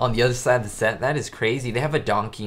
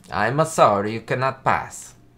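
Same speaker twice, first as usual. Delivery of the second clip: horrible, bad fake Italian accent; 3 dB louder than usual. Retelling a scene with Ricky and Ethel, voicing the official stopping them: horrible Italian accent. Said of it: "He says with my horrible Italian accent".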